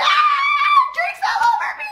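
high scream. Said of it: "she screamed".

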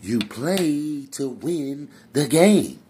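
slow bellow, with stress leaning on "play". Talking about playing for wins, not stats, in a Herm Edwards voice. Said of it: "in my Herm Edwards voice".

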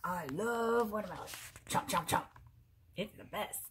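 playful put-on alligator character voice. Reading a picture book aloud, voice the alligator in an alligator voice. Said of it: "Do you like my alligator voice?".

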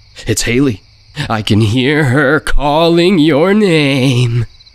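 playful ribbing, word stretched long. A woman speaks to the narrator and Daniel, teasing. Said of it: "She teased".

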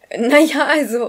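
stammering. Asked if cooking is their other hobby, the narrator stammers. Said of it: "stammelte ich".

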